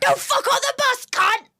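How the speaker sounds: put-on shrill, high shout in broad Australian accent. Describing a video to the others, imitating an Australian guy yelling. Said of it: "the Australian guy yelling about people fucking".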